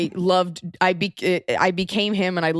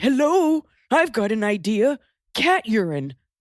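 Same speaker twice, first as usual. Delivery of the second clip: slow, unhinged, deranged crazy-man character voice; 3 semitones higher than usual. Describing a sketch-show performer, imitating an insane-sounding man. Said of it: "He sounds like, ... Like he's just an insane person".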